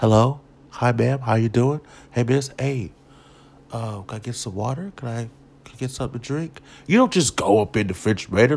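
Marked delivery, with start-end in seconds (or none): 0.0-6.6 put-on courteous, polite, respectful tone. Showing how a guest should greet a friend's family: acting out a polite guest. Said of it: "you come in, you speak".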